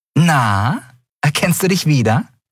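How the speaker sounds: high, said with a grin. Narrating a story, a woman shows a man a wanted drawing: grinning. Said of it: "präsentierte es ihm grinsend".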